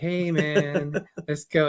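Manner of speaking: very slow, chilled, laid-back surfer drawl. Describing a friend met in person, imitating a laid-back surfer voice. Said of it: "Charlie's like a surfer".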